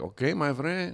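put-on thick, classic Mexican accent, laid on. Retelling how a cab driver greeted them on the way to the airport; Mexican accent. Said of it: "This guy had the quintessential Mexican accent".

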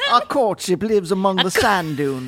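mixed half Southern, half British accent. Asked about the accent, repeating the line in a half southern, half british accent. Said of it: "halfway between Southern and British".

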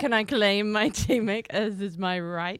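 slow, stately proclaiming, every word weighty. Imitating a team captain claiming a teammate: Braveheart voice. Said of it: "you sounded very Braveheart going".

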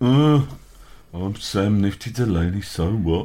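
weary, jaded, very slow drawl. Showing how he'd say the catchphrase if jaded: mock-jaded tone. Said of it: "This is how I'd do it if I was jaded".

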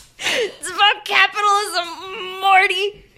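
squeaky, very high, pushed-up cartoon character voice. Continuing a drunken movie pitch at a party, in a Rick impression. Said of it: "that's my Rick impression".

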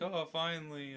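very high, giddy voice, excited relief. Imitating a star character excited to be lowered into lava: imitating an excited character. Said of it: "it just gets all excited".

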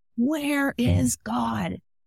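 mock high-pitched screaming. Telling a joke, acting out a school principal questioning a boy: imitating a screaming principal. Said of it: "And he's screaming at this kid".

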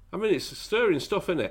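ordinary talk, nothing marked

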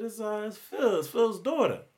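high-pitched female voice. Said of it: "it's a female voice".

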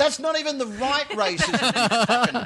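high, slow voice with laughter.

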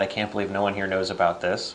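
plain

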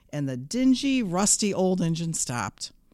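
ordinary delivery, nothing marked

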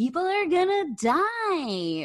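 very high, very slow swooping voice, die dragged out. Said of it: "That's a really good impression".

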